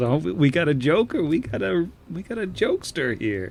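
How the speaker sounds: mocking elf bandit voice. Voicing an elf who mocks a traveler's joke: voicing a mocking elf robber. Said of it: "One of 'em looks at the other and says".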